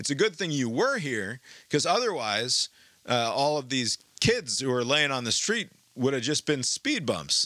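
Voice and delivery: play-acted, clumsy, awkward jokey delivery. Retelling what a driver said to a truck driver: imitating an awkward jokey remark. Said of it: "sort of in an awkward, jokey fashion".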